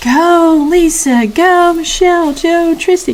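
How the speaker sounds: crowd of voices yelling.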